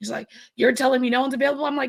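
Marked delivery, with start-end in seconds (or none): none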